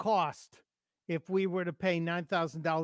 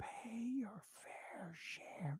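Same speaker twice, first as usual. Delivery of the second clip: eerie, slow, drawn-out, creepy whisper; 5 semitones higher, 15 dB quieter than usual. Mocking a politician's tax slogan: creepy whisper imitating Joe Biden. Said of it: "Joe gets all creepy and he whispers".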